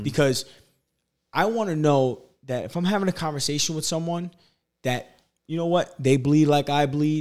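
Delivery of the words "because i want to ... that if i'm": plain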